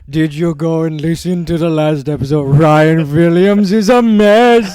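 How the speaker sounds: very loud, slow, drawn-out put-on Indian man's accent. Recalling a bit where an Indian man calls in about the episode: Indian man's voice. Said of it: "we did do an Indian man br- calling in".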